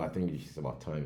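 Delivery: normal talking voice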